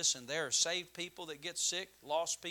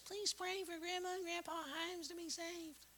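put-on very high, soft, squeaky little-boy voice; 13 semitones higher, 9 dB quieter than usual. Retelling one of the kids' nightly prayers, imitating a squeaky voice. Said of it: "just squeak up in that voice".

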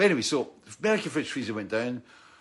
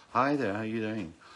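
vacant, flat, blank and pleasant, no life; 2 semitones lower than usual. Retelling a phone call, imitating a Stepford Wives voice, no personality. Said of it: "Stepford Wives kind of vibey thing".

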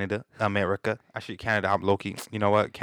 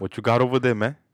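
English words in a put-on Spanish accent; 3 semitones higher, 4 dB louder than usual. Playing a customer ordering a sandwich at a deli: Spanish accent. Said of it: "in English, but in a Spanish accent".

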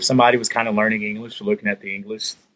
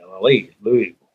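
usual speaking voice

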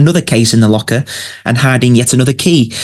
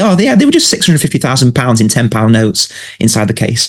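plain

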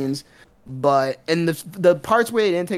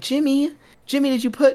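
put-on motherly voice, much higher; 9 semitones higher than usual. Retelling a mother addressing her son, in a mom voice. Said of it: "she said like something in her mom voice".

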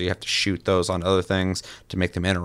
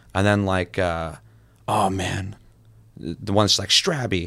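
usual speaking voice

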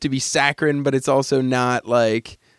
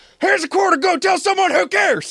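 put-on very high, top-of-the-lungs shrieking scream. Retelling a man's podium speech to his critics, imitating someone screaming. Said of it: "screams at the top of his lungs".

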